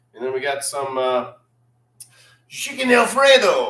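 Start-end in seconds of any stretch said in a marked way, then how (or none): 2.5-3.7 put-on French accent, very high-pitched and loud. Listing what he is drinking and eating, the speaker names the dish: french accent. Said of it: "that's my French accent".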